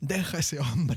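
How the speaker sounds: acted sudden outburst. Retelling shouting at a nurse who complained about her husband: imitating own shout. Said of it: "le grité".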